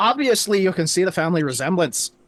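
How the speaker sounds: normal talking voice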